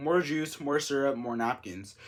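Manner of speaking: ordinary delivery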